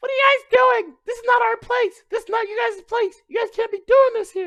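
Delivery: mock, shrill, very high, loud, angry scolding yell. Retelling a girl at the door yelling at the group, imitating a girl yelling. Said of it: "She was she was yelling at us".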